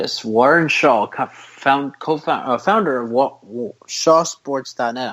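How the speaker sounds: halting, very slow stammering, tripping over words. A show host introducing his guest at the end of the show, stammering. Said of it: "I'm stammering right now".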